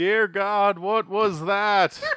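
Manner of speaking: very loud, high outcry. Retelling what a man said after dropping a bottle; very loud. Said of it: "He says very loudly".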